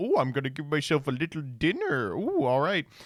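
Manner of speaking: animated, swooping sing-song, musing to oneself. Imitating someone who takes delivered food and walks off with it: imitating the food thief. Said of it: "trying to take a picture of the food being delivered and then just walk off with it".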